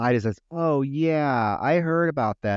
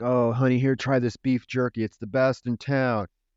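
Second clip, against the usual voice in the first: mock macho alpha male voice. Retelling a film scene where the boyfriend offers beef jerky: imitating a macho alpha male. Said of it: "he's being all, you know, macho and shit".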